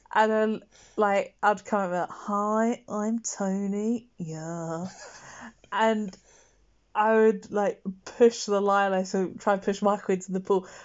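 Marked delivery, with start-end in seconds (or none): 2.1-4.1 put-on hippie character voice. Recalling a shark audition, introducing a made-up character: Tony the hippie voice. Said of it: "who was a hippie".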